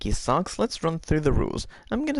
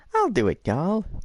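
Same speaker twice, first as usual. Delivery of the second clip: squirrel-like cartoon voice; 3 semitones higher than usual. Game host voicing Squirrely answering the call for contestants, in Squirrely's voice. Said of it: "That was my squirrely voice".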